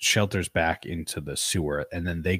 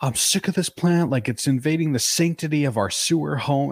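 mock wild-man yelling, very high and shrill; 9 semitones higher, 5 dB louder than usual. Recounting a show scene where a character freaks out at a plant, retelling a wild yell. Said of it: "he's like yelling like a wild man".

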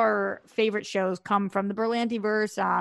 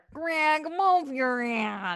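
put-on grandmother voice; 4 semitones higher than usual.

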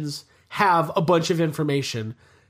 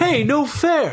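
put-on character voice, pitched higher; 8 semitones higher than usual. Between lines, a speaker slips in a bad Alf impression: bad Alf impression. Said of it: "That's my bad Alf impression".

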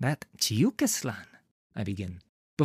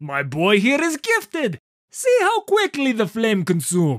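hearty, very loud, pitched-up booming bellow; 8 semitones higher, 8 dB louder than usual. A narrator reads a teacher praising his student to a merchant: bellowing. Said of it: "as Chiyukislan bellows".

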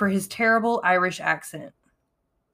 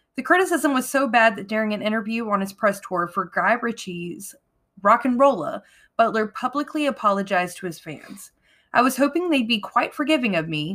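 plain

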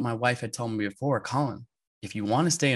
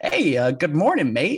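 mimicked, chipper, cheerful veteran voice; 4 semitones higher, 6 dB louder than usual. Speaker retells a polar veteran coming up beside them; imitating Lou's cheery, chipper voice. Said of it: "all cheery and chipper".

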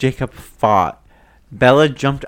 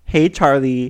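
normal talking voice

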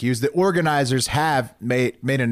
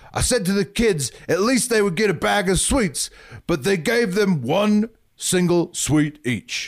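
shoddy fake Scottish accent; 8 semitones higher than usual. Quoting what a Scottish guy said, in a bad Scottish accent. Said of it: "shitty Scottish accent. Sorry about that".

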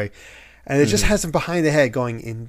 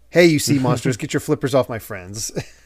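normal talking voice

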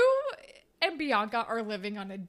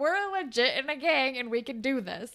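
usual speaking voice

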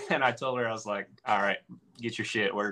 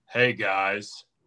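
really low, deep voice at bottom of register. Retelling a voice heard while trying to fall asleep, really low voice. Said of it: "this really low voice that goes".

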